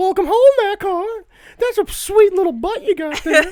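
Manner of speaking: put-on very high, sleazy, creepy old man voice. Proposing a new voice for the Deku Tree greeting Makar, in a Family Guy old-man voice. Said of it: "Deku Tree needs to be the old pedo guy".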